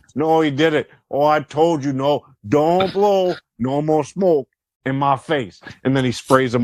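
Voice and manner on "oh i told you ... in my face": put-on wrestler voice in a Canadian accent. Retelling a wrestling moment, smoke blown in his face again: Roddy Piper Canadian accent. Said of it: "with the Canadian accent".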